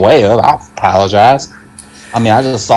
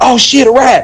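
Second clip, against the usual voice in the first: high, loud shout. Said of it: "So I shout".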